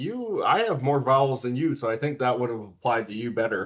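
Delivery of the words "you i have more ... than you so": ordinary delivery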